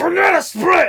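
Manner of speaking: mock sudden scream. Retelling how the other speaker suddenly screamed: imitating a sudden scream. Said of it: "you just suddenly scream at me".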